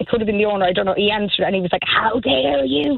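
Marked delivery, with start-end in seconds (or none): 1.9-3.0 put-on strong Irish accent, higher pitch. Retelling a phone call with a barman who refused to help: imitating a strong irish accent. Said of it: "he's got a worse accent than the Cork accent".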